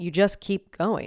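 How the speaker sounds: play-acted dry deadpan, flat level tone. Retelling a woman's answer to the group's question: imitating a deadpan reply. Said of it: "she deadpans us and she goes".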